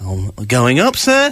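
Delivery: put-on deep, slow, drawn-out fox voice. Joking about a fox riding a lift up a building, the speaker does a fox impression. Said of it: "That's my impression of a, a fox".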